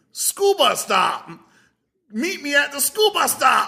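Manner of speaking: high, shrill, furious German accent. Comedian in a stand-up bit about a funny phrase: angry German accent. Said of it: "sounding like an angry German".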